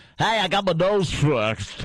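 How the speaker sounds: fake, phony on-air radio-announcer voice. Improvising a bit about someone stuck with a radio voice, phony radio voice. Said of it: "You just have the phony radio voice".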